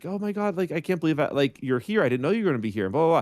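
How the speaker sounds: mock thrilled, gushing, excited freaking out. Retelling a fan who recognized them on the street: imitating a fan freaking out. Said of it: "freaking out".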